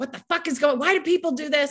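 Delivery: mock yelling, high-pitched outburst. Recounting a past moment, she acts out yelling at her husband. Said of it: "of course I started yelling at him like".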